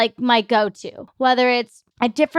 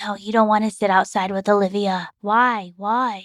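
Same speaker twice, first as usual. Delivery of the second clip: put-on elderly woman's voice; 3 semitones lower than usual. Voicing the discouraging voice sitting on their shoulder, in an old lady voice. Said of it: "my old lady voice".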